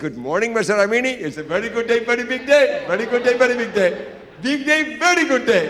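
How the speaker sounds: mock very loud, super-excited, gushing voice, climbing up. Retelling a hotel manager's greeting in the lobby: imitating an excited manager. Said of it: "he was super excited".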